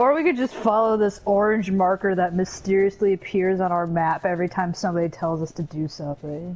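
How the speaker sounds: plain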